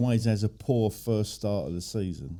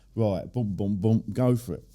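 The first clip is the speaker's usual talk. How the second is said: usual speaking voice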